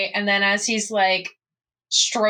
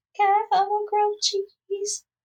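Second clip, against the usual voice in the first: tiny, very high-pitched little voice; 12 semitones higher than usual. Imagining what she says while cradled in someone's arms, in the tiniest of voices. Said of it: "she says in the tiniest of voices".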